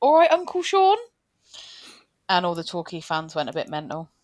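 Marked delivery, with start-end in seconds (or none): 0.0-1.0 put-on Northampton accent. Recalling a match day, retelling what cousin Emma said, imitating Emma's broad Northamptonian accent. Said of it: "with the broadest Northamptonian accent".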